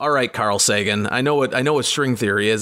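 normal talking voice

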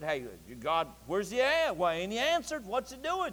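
soft, swooping, teasing and jeering tone. Speaker retells Elijah taunting the others about their god; retelling a mocking taunt. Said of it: "He mocked and said".

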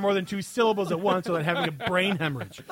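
ordinary talk, nothing marked

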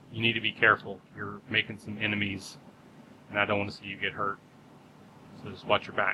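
quiet, hushed half-whisper, said on the side. Voicing a character who pulls a player aside: half-whispering as a character. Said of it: "he just kinda whispers to you".

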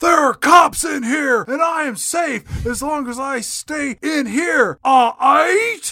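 full-throated, shrill, very high acted scream. Retelling a movie scene where the character screams: imitating Nicolas Cage screaming. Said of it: "scream out at the top of his lungs".

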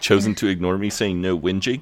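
ordinary delivery

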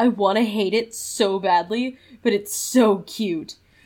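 usual speaking voice

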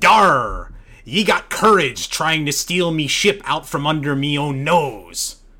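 put-on swashbuckling pirate accent, loud and belted. Reading out a Final Fantasy V quote in Faris pirate accent. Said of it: "in her pirate accent".

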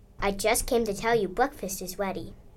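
ordinary delivery

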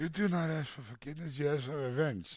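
mob boss voice, cotton-stuffed cheek. Retelling a dental visit with cotton in the mouth: Brando in The Godfather voice. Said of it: "I feel like Brando and Godfather".

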